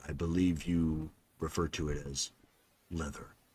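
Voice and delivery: very hushed, quiet, low, dull, echoing monotone. Voicing a being speaking into a character's mind: low dull echoing voice. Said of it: "in a very low tone, uh, dull tone".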